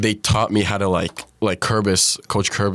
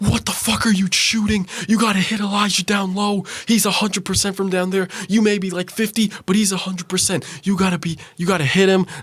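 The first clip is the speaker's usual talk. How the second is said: mock yelling, pitched much higher; 11 semitones higher than usual. A player retells his coach yelling at him during a game, imitating a yelling coach. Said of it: "the coach is yelling at me saying like".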